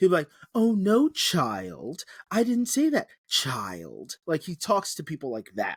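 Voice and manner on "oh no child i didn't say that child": over-the-top camp drawl, very slow and swooping. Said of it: "call someone child in the gayest voice he can".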